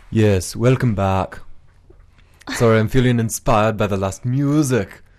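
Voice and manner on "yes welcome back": bad, way-off fake Danish accent. A host welcoming listeners back to the show, in a bad fake Danish accent. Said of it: "not even close to what a Danish accent sounds like".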